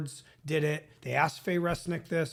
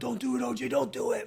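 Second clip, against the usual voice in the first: high, raised hollering voice; 7 semitones higher than usual. Recounting the OJ story, voicing AC yelling at OJ, retelling AC's yell. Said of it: "AC's yelling at him".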